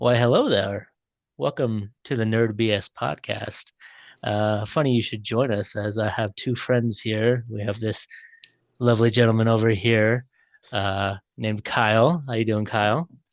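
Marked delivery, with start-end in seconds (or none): 0.0-0.9 calm, genteel movie-character voice. Opening the Nerd BS podcast, Obi-Wan greeting. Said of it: "Obi-Wan opening".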